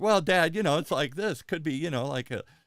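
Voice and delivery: put-on very loud, high, hedging teenage girl voice. Recalling how his daughter talked at that age: imitating his daughter as a teen. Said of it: "my daughter did at that age here".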